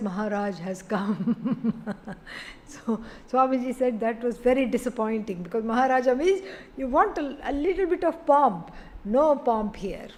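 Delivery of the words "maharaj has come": very soft, hushed, low-key voice without fanfare. Speaker quoting a lackey's announcement in a story, very soft voice. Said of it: "in a very soft voice".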